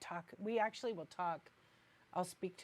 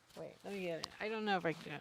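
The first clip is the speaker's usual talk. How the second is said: usual speaking voice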